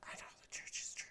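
hushed whisper close to the ear. Retelling how a mother prompts her small child in church, imitating a whisper. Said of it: "Jeff Dunham puppet".

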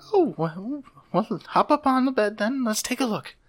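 very high, kindly, gentle bedside-manner voice. Voicing a hobgoblin nurse greeting a patient: gentle hobgoblin nurse voice. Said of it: "that's just the most gentlest voice I've ever heard".

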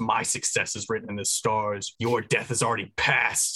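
furious, raging, very angry delivery. In character, speaking to the creature being wrestled down, very angrily. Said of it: "very angrily says".

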